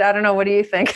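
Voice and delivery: put-on sarcastic delivery. Retelling a reply to someone who asked about YouTube: imitating own sarcastic reply. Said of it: "I responded with a very sarcastic response".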